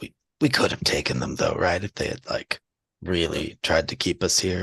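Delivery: whispering in character. Leaning in close to another character to whisper: whispering in character.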